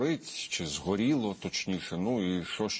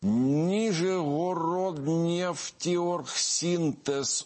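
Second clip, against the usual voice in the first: deep breath, then high, very slow, deliberate enunciation. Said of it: "мушу видихнути зараз, набрати повітря в груди і вимовити".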